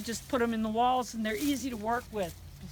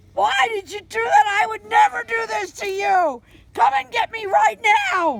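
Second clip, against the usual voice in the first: put-on goat voice, sad and complaining, woeful; 11 semitones higher, 12 dB louder than usual. Voicing a goat's sad tale of woe while filming: voicing Penny the goat's complaints. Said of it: "That's Penny".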